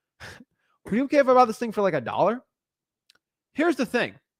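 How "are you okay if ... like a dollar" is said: playful, half-laughing, pitched-up joking tone. Showing how to make a lowball offer to a seller: laughing jokingly. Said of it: "I sort of did that in a joking mannerism".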